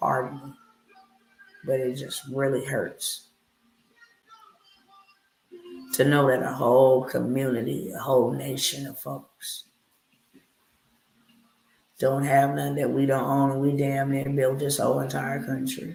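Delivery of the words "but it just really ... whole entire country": emotional, choked-up, on the verge of tears. Preaching about a community owning nothing, emotional, near tears. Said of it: "I'm getting really emotional about this".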